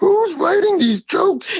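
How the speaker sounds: raspy, very high, loud voice. Recalling Super Dave's bits on the show, raspy Super Dave voice. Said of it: "he does that raspy voice".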